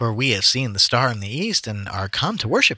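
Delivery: plain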